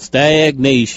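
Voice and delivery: "stagnation" said in Southern US accent. Saying a word on request from another speaker: southern accent. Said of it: "say stagnation in a southern accent".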